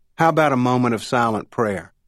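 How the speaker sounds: ordinary delivery, nothing marked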